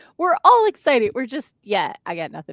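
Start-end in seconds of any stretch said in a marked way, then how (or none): 0.2-1.6 mock excited cheer, high-pitched. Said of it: "and Swan's like".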